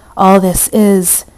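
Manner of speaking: in desperation. Narrator reads Beatrice answering the healer about his plans, desperately. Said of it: "she said desperately".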